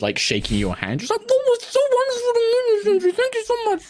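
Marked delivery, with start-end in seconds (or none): 1.3-3.8 very high, words squeezed through a mouthful of food. Voicing a character greeting Sentry while shaking hands: talking with mouth full of food. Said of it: "with, like, her mouth full of food".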